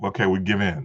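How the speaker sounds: usual speaking voice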